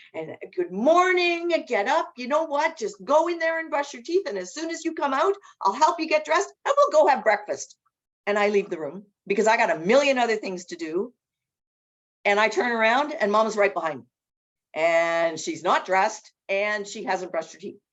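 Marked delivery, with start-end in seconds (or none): 0.6-7.8 loud, chirpy, cheery, upbeat voice. Retelling how they wake Mama in the morning, mimicking a loud, cheery voice. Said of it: "you in your loud, cheery voice".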